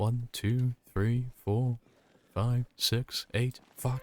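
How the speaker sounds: whispered under breath. Showing how they count kills in their head, whispering under breath. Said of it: "you can hear me whispering under my breath".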